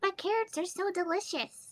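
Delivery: tiny, very high little voice. Voicing a character's inner reaction: tiny little voice. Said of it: "there's this tiny little voice that goes".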